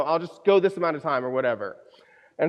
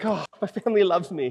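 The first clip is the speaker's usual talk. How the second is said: play-acted weepy voice, speaking through tears. Retelling a thought from while crying during the race: imitating own crying. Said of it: "I started crying, like".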